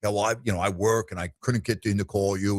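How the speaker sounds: acted indignant, huffy tone. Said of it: "would get all huffy and puffy".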